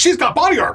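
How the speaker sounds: pirate voice pitched way up high.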